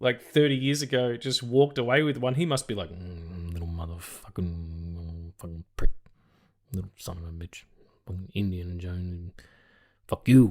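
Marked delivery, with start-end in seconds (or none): 2.9-10.5 put-on mumbled stoned-guy voice. Copying someone else's impression of a man, mumbled stoned-guy voice. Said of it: "I'm kind of stealing that impression ... he's just a mumbling, kind of stoned guy".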